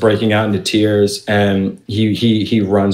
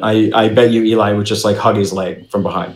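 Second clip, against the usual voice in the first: ordinary talk, nothing marked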